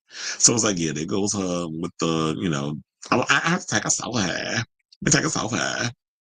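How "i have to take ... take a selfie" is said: put-on creaky, fried valley girl voice with vocal fry. Acting out an influencer taking a selfie, in valley girl vocal fry.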